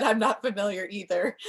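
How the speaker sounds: usual speaking voice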